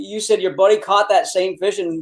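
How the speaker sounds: plain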